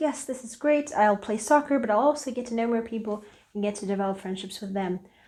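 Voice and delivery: ordinary talk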